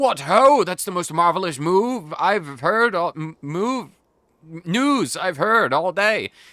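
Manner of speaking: pretend tipsy voice. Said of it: "I'm a bit drunk".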